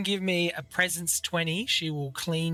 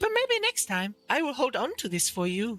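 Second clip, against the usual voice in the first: high, swooping, sing-song merchant voice; 7 semitones higher than usual. Voicing a merchant turning down a haggle: Carmilla character voice. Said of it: "trades the orb with the ring".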